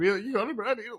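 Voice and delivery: high-pitched voice cracking partway through. Retelling an opponent's question, imitating a voice crack. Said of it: "a crack in his voice as well".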